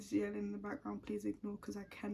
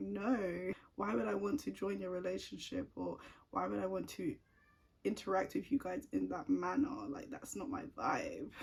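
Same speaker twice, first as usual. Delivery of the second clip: ordinary talk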